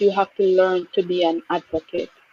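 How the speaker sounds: usual speaking voice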